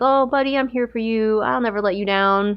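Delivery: put-on gentle, very comforting, soothing, consoling tone. Retelling how a character consoles a grieving friend: imitating a comforting tone. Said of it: "being very comforting and being like".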